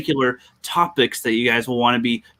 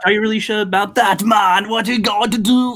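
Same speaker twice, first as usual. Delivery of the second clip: clumsy, horrible put-on Jamaican accent, pitched up; 7 semitones higher than usual. Trying accents after being asked: attempted Jamaican accent. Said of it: "that's a Jamaican accent".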